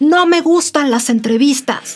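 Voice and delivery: loud shout. Retelling how a man turned around and yelled at her: imitating someone shouting. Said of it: "se volteó y me gritó".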